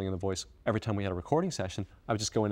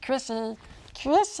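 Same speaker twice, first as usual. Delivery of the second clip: cutesy babbling gremlin voice, high and squeaky; 14 semitones higher than usual. Like you're a small needy creature calling out to a beloved friend, trying to be silly and annoying just to get a reaction. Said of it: "this little voice that I do to annoy friends".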